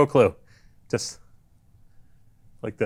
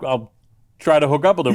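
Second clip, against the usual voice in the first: ordinary talk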